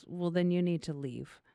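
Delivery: mock level, totally flat deadpan delivery. Retelling her reply after being told never meet your heroes: imitating a deadpan reply. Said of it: "just straight face goes".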